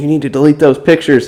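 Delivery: irate man's voice, high and heated. Retelling how a man demanded the cousin delete phone pictures: imitating a man yelling. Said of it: "he's yelling at her to delete the pictures".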